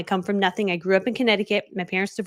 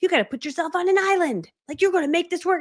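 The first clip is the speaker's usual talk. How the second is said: very high, fierce shouted rant; 10 semitones higher than usual. Quoting a man in a video, imitating him yelling. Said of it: "and he's like yelling".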